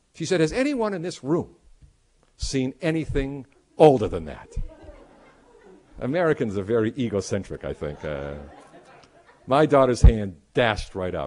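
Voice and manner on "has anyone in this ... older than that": confident, self-assured tone. Retelling a tour guide asking the group: imitating a guide's confidence. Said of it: "with full confidence".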